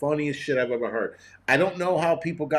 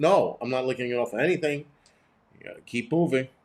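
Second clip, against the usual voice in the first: usual speaking voice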